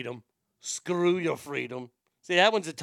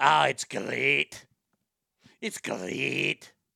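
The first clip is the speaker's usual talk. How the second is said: put-on Scottish accent, spoken very slowly; 3 semitones lower than usual. Running through accent impressions, a scottish accent impression. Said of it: "Scottish, I can't do a lot".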